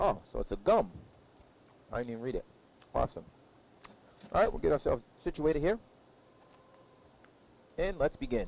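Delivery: chewing while talking. Flight sim streamer getting situated to begin, chewing while talking. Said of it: "I do apologize about the chewing".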